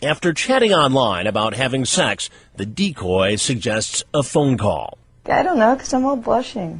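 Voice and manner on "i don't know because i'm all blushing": very high, put-on young girl voice. A decoy on a phone call with a man, in her best young girl voice. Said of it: "puts on her best young girl voice".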